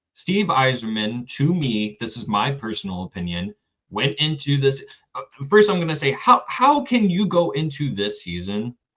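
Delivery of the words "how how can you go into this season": elevated, insistent, raised, swooping voice. Speaker pressing a point they keep making to listeners, in a raised voice. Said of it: "my voice is getting elevated, as you guys can hear".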